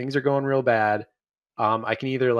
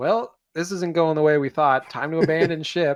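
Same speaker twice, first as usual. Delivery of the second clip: put-on nonchalant voice, pitched higher; 4 semitones higher than usual. Retelling a movie character ordering to abandon ship: nonchalant Edie Falco impression. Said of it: "just says it so nonchalantly".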